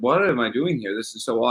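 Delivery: ordinary talk, nothing marked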